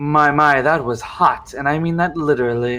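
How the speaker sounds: smirking, smug delivery. Voicing a woman with purple hair who greets the group: smirking, smug delivery.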